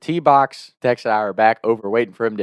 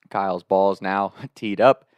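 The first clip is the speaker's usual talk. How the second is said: ordinary talk, nothing marked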